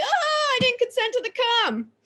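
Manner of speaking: mock very high squeals between cackles. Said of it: "And I cannot stop laughing".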